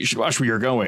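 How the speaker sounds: curt, unfriendly tone. Voicing a stranger who glares at a player: unfriendly warning. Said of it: "he doesn't really give you a friendly look".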